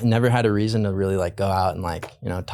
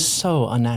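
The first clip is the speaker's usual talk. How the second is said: ordinary talk, nothing marked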